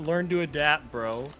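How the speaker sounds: loud, mock jokey, teasing, mocking taunt. Retelling what a brother said when he beat the speaker: imitating a brother's mocking tone. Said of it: "would always say jokingly or mockingly".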